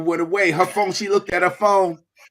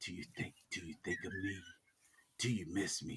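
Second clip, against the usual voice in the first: very soft, hushed, barely voiced whisper; 10 semitones lower, 25 dB quieter than usual. Show the other speaker how a man whispered his first lines, imitating someone whispering. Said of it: "whispered his first twenty line".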